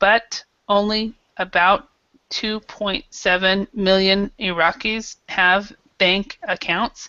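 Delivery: each word separated with stops, word by word. Mimicking how someone speaks a sentence: one word at a time. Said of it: "actually saying one word at a time".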